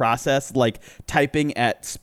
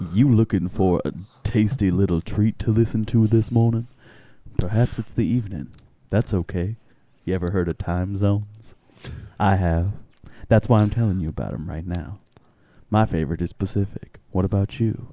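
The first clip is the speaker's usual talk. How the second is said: fake deep voice, lower pitch; 4 semitones lower than usual. Opening the podcast episode as a bit: put-on deep voice. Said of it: "It's deep voices today".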